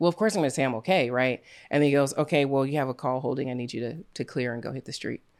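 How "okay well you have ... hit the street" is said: ordinary delivery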